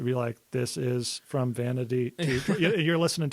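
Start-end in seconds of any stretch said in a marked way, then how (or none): 0.5-2.6 very slow, robotic text-to-speech reading voice. Showing how a standard reader app reads a book: imitating a robotic reader voice. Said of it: "makes it sound super robotic".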